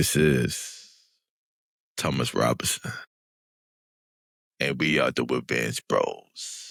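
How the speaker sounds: very low, slow announcer voice.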